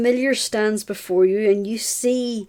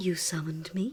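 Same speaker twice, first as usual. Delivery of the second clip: low, gentle, soft and very quiet voice; 4 semitones lower, 12 dB quieter than usual. A summoned creature first speaks in the back of your head, in a soft voice. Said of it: "you hear a soft voice in the back of your head".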